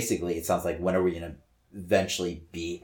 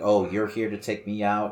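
acted-out, scared, terrified begging tone; 3 semitones higher, 3 dB louder than usual. Retelling a comic scene where Sugar Man pleads with Bishop: imitating Sugar Man pleading. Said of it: "he's pleading to Bishop".

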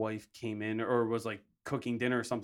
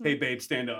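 ordinary delivery

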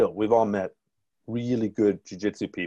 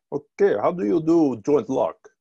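put-on Russian accent, raised voice; 7 semitones higher, 5 dB louder than usual. Quoting a man he had on his podcast, in a Russian accent. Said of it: "I'm going to stop with the Russian accent now".

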